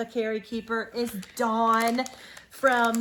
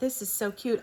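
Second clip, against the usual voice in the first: ordinary delivery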